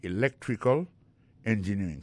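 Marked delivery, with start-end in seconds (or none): 0.0-0.8 electrical with second syllable lec stressed. Explaining word stress in electrical engineering: stress on lec in electrical. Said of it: "accent tombé dans electrical là, c'est sur deuxième syllabe là".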